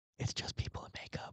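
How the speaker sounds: very soft, breathy, hushed whisper. Retelling how a dad calmed a scared five-year-old: imitating dad whispering. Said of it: "he whispers to me".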